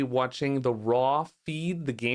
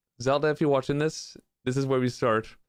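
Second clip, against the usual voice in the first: usual speaking voice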